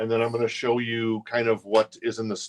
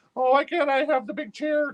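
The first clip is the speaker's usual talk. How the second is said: exaggerated, very high put-on squeaky voice. Imitating Casey, who is hanging out with us: Casey impersonation. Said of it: "sorry for that impersonation of. Uh, I'm sure your voice doesn't sound like that".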